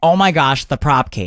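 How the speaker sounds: ordinary talk, nothing marked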